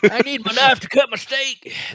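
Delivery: put-on Texan accent. Repeating a line from a story, Texan accent impression. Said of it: "that's that sounds pretty Texan".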